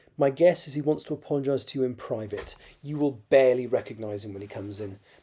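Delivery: ordinary delivery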